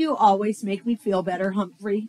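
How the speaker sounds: ordinary delivery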